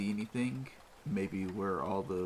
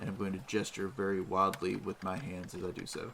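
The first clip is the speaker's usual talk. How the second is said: usual speaking voice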